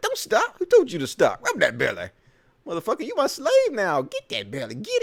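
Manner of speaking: high, swooping put-on kangaroo voice. Voicing a kangaroo getting his belly rub: voicing a kangaroo getting a belly rub. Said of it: "Look how cute he's like".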